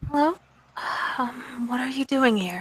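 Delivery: soft-spoken, gentle, hushed high voice. The Slua replies to a newcomer asking questions, in soft voice. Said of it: "It's a you know very kind of soft voice".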